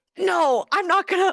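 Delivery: mock very high, slow, drawn-out panicky voice. Retelling being pushed in a prayer line: imitating own past panicking. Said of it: "'cause I was panicking".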